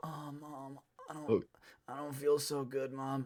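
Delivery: high, slow, laid-on-thick fake-sick voice. Retelling faking illness to a mom to skip school: imitating a fake sick voice. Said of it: "I was trying to fake it so hard".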